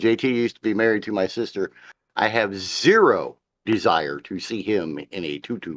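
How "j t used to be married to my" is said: ordinary delivery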